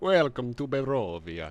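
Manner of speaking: deep, lordly vampire count voice. Greeting the group, trying out a Strahd voice. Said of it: "What if that was my Strahd voice?".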